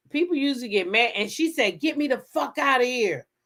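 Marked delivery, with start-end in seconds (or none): none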